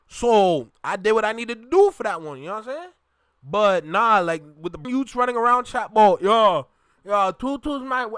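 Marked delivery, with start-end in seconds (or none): 6.2-8.1 mocking fake Caribbean accent, pitched higher. Mocking youths who copy the caribbean accent: imitating youths' put-on caribbean accent. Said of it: "you sound slow".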